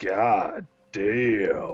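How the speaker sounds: deep, low voice. Voicing a voice heard from the distance at night: deep voice. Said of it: "you hear a deep voice".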